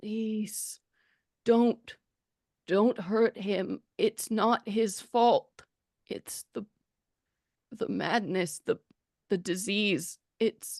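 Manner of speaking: feeble, weak, slow voice, words trailing away. Voicing a dying mushroom creature pleading in the heroes' heads: weak, trailing voice. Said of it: "trailing weakness, uh, in its voice".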